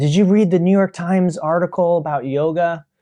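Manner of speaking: acted, flustered, anxious, nervous and agitated voice. Retelling a woman coming up after class, imitating a nervous, agitated voice. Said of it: "in a very kind of nervous, agitated voice".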